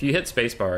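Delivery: ordinary talk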